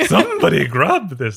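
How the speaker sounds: lofty, haughty, high, very loud nanny voice. Retelling what a man shouted while collecting flowers: put-on haughty voice. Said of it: "Kind of like like a haughty Mary Poppins".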